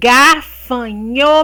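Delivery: gafanhoto said slowly, syllable by syllable. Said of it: "quatro ou mais sílabas".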